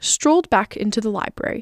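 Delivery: plain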